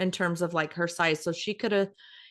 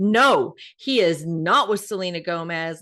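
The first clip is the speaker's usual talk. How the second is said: put-on loud, furious girl's outburst, every word deliberate; 7 dB louder than usual. Retelling a girl denying photos of her idol with someone else: imitating a furious girl. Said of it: "and she was furious".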